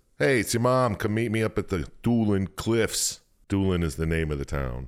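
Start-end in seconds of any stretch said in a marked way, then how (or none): 0.2-3.2 put-on Long Island accent. Reading aloud a letter from her mom in a story, Long Island accent. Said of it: "Is her mom from Long Island?".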